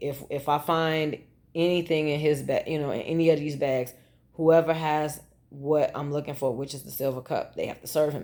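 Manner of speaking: usual speaking voice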